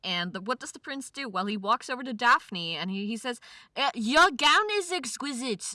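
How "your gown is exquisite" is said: really bad, exaggerated fake German accent, pitched up. Acting out the prince speaking to Daphne: really bad German accent. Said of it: "That is a really bad German accent".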